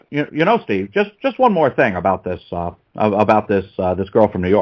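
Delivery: halting, poor put-on imitation voice. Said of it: "There was my bad Obama impression".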